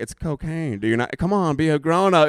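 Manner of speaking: imitated coaxing voice. Retelling a movie scene of offering cocaine: imitating a coaxing voice. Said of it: "coaxing this dude in the whole time".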